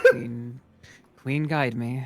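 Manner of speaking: muttered under the breath. Speaking in character in a role-play scene, muttered under breath. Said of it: "say under my breath".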